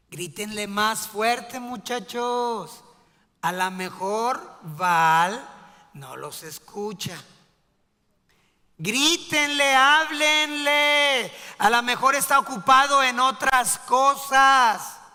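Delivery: very loud, acted, jeering sarcastic taunting. Voicing Elijah taunting the prophets of Baal: sarcastic mocking as Elijah. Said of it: "empezó a ser sarcástico".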